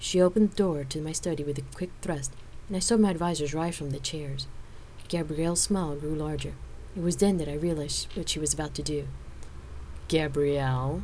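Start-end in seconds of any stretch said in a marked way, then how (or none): 10.1-11.0 amused, drawn-out drawl. Watching gabrielle open the study door on the advisors, amused warning drawl. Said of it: "I drawled out in an amused warning tone".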